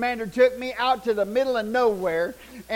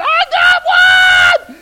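very loud, very high scream, drawn-out got; 13 dB louder than usual. Retelling the moment of catching something in a bag, retelling a scream. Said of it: "I was screaming".

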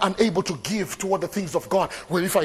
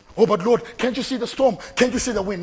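put-on alarmed voice, panicked and frantic; 4 semitones higher than usual. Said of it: "Why are you panicking?".

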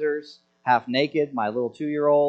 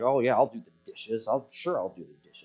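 acted-out grumbling, softer; 3 semitones lower, 7 dB quieter than usual. Acting out his reply when his wife asks him to do the dishes, mock grumbling. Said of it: "I'm just grumbling like a jerk".

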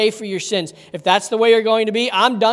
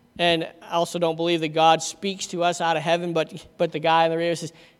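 ordinary talk, nothing marked

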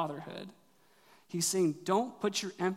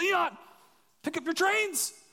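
put-on shrill, very high scolding yell; 12 semitones higher, 4 dB louder than usual. Retelling yelling at a child to pick up his toys: imitating own yelling. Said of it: "I'm just yelling at Leon".

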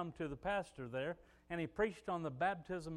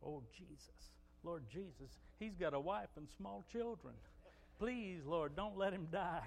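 put-on murmur under the breath, quieter; 8 dB quieter than usual. Retelling what a man said beside the speaker: imitating someone muttering under his breath. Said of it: "I could hear him under his breath say".

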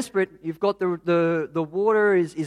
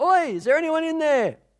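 put-on shrill, very high yelling; 9 semitones higher than usual. Telling of a man in a four-wheel drive calling out at a house, retelling a man's yell. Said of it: "yelling, going".

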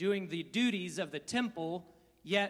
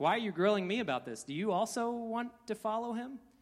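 mock, snarky tone dripping with sarcasm; 3 semitones higher than usual. Retelling the healed man's reply to the Pharisees: imitating a snarky sarcastic reply. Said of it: "That sounds like a snarky, sarcastic response".

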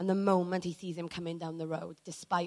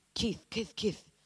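put-on Singaporean accent; 3 semitones higher, 3 dB quieter than usual. Retelling a man running in and calling out to her: put-on Singaporean accent. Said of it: "This is my best Singaporean accent".

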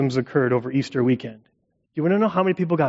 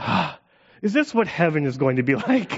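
words spoken through a sigh. Retelling a son's remark while basking in the sun: imitating a sigh while speaking. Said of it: "he sighs and says out loud".

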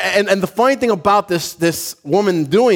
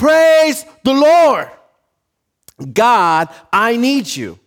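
put-on, slow, unhurried, drawn-out calling out; 4 semitones higher than usual. Retelling a woman praying out loud from her porch: imitating someone shouting. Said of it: "And she's shouting this from her porch".

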